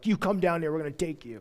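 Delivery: mock really aggressive delivery. Retelling a captain's demand that Elijah come down: imitating an aggressive demand. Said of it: "really aggressive".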